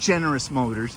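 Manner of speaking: ordinary talk, nothing marked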